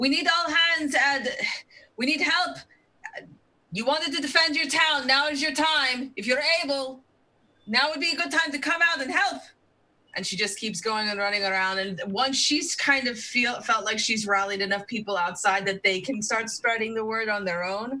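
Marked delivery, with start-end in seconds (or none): 0.0-9.4 high, loud, rallying shout. Playing a character rallying townsfolk door to door: shouting to rally people. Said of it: "she's pretty much just, um, shouting".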